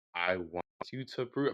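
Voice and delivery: slow, low, deliberate delivery.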